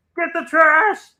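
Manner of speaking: very high, little frog puppet voice, shouted. Hosting trash night with a guest, shouting in a Kermit the Frog voice. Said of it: "Was that Kermit the Frog telling Devon".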